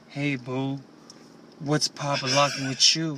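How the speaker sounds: mocking, fake smooth come-on voice. Describing how someone does not talk, mocking a fake come-on voice. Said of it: "does not talk like".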